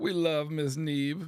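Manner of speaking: cheerful, sunny, happy voice, slow and drawn out. Reading out a requested line, in a happy voice. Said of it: "Then in a happy voice".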